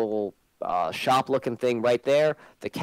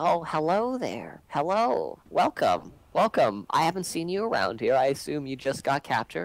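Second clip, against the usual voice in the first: put-on old woman voice; 3 semitones higher than usual. Voicing a half-elf who greets a newly captured newcomer: old half-elf woman voice. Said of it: "it's an old half elf female, and she's like".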